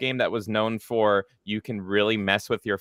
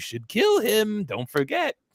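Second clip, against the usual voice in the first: put-on whisper, pitched much higher; 10 semitones higher than usual. Describing a game's guide voice in the player's ear, Mark Hamill whispering. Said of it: "Mark Hamill just whispering in your ear".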